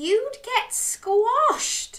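very high, spluttering outburst. Narrator voices a dog answering a crab's offer, spluttering. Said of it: "spluttered Dog".

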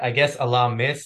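ordinary delivery

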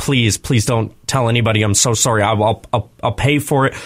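put-on tearful, crying, pleading voice. Retelling a shoplifter caught in the act: imitating someone crying and pleading. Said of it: "she freaked out and she started kinda crying".

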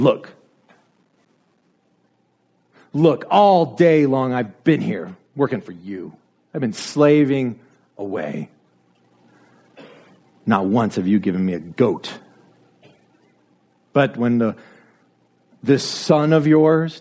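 pompous. Retelling the story, the speaker acts out the elder brother addressing his father in a mock pompous, superior tone. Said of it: "Do you hear how he is pompous, superior".

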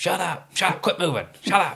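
high, repeated hollering and screaming. Retelling yelling at the kids on a training night: imitating own screaming. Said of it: "I'm screaming at 'em all the time".

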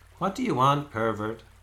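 said teasingly. A fairy maiden who just rose from the lake questions someone, teasing. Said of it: "she teased".

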